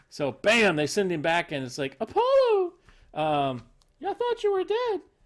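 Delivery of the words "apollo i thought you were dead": very high, sing-song, swooping put-on character voice. Acting out a comic book scene as Athena: Athena voice. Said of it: "that's my Athena voice".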